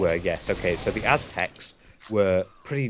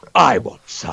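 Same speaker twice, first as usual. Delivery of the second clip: lifted voice, taking the challenge; 7 dB louder than usual. Retelling a comedy bit where a rival fan answers: imitating a fan from the other team. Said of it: "stood up from the other team and went".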